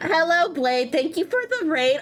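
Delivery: put-on Valley Girl accent. Showing another speaker how a raid thank-you should sound, in a valley girl voice. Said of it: "You're not even doing the Valley Girl voice for Blade".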